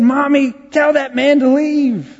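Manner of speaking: put-on, shrill, very high-pitched scream. Retelling how a patient reacted to a visitor walking in: imitating someone screaming. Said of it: "She was screaming".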